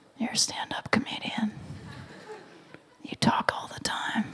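very quiet, barely there muttered whisper. Recalling sitting down to write a talk and telling themself: imitating own whisper.

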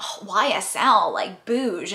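very slow, judgy drawl. Retelling how people comment on her earrings, in a mock-judgy tone. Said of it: "but like in a judgy tone".

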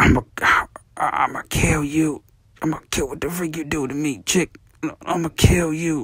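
weak, croaky, hoarse, barely-there voice. Retelling a voice message left while sick: imitating his own hoarse voice. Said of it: "I had my little hoarse voice on".

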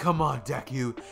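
usual speaking voice

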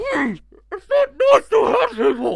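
deliberately terrible voice, very high, shrill, swooping. Asked to keep doing voices, giving the worst voice possible. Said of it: "The worst voice".

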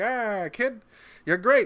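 energetic, welcoming, high carnival barker voice. Retelling a scene where a man hands Al an accordion: carnival barker voice. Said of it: "He's kind of got like a carnival barker kind of a vibe".

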